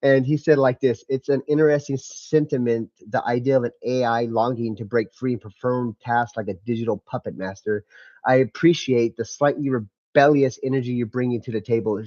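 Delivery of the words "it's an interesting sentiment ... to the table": ordinary talk, nothing marked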